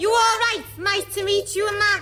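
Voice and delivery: put-on Liverpudlian accent. Greeting a visitor who monitors Earth transmissions, in a Liverpool accent. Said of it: "You're speaking like the good people of Liverpool".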